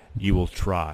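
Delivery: titan's voice, spoken out loud. Voicing a being heard by everyone before fading away: voice of Kronos. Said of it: "everyone does hear the voice of Kronos".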